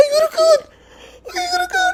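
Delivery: put-on very high, drawn-out, frightened girlish voice. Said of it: "His voice turned into, like, a girl".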